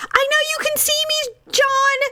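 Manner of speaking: very high, shrieking, excited fan yell. Describing a girl at a rock concert, retelling a fan yelling at the guitarist. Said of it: "starts yelling at the guitarist like".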